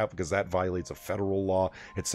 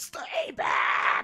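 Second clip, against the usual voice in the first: high, strained scream. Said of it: "there's [name] screaming".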